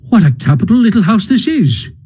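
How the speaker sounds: bright, glad, cheery call, high and sing-song. Reading a story, a character runs about a little house lighting lamps: calling out cheerily. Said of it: "he called out cheerily".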